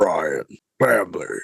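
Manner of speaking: very low, rough, raspy voice. Answering a joke about saying family in Vin Diesel's voice: Vin Diesel voice. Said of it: "Just imagine I said that in Vin Diesel's voice".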